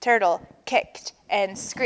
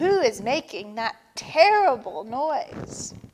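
ordinary delivery

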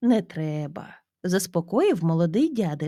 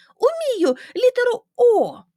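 very high, loud, exclaiming outburst; 6 dB louder than usual. Asked by an older man if he can write a letter, he exclaims. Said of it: "вигукнув Аурімас".

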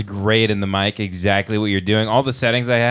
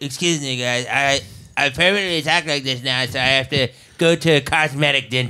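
exaggerated underbite voice through a thrust-out jaw; 3 semitones higher than usual. Podcast host joking his jaw will eventually come off, in an exaggerated underbite voice. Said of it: "I try to do an underbite as I do".

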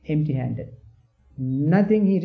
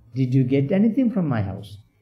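mock contemptuous, scornful, swooping sarcastic tone; 2 semitones lower than usual. Retelling how the Brahmin asks the returning monk: retelling a scornful sarcastic question. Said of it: "in a very scornful, uh, sarcastic, uh, tone".

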